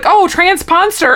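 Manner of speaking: high-pitched, slow, sure and confident tone.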